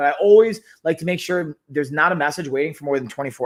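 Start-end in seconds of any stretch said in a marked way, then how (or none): none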